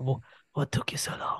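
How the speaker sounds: hushed, very quiet, breathy near-whisper. Recalling a rescuable hostage's line in MGS, in a Kojima voice. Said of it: "in his Kojima voice".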